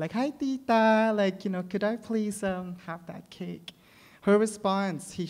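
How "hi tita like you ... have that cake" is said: mock very bakla, sweet, affectionate, endearing politeness. Retelling own request to an older cake worker: imitating own endearing bakla manner. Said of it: "in a very endearing way, like, very bakla".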